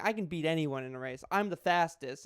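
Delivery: normal talking voice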